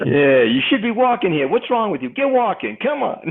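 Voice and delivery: put-on very high, shrill New York accent. Voicing Jim Johnson, who is apparently from New York, in a New York accent. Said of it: "Jim Johnson's apparently from New York".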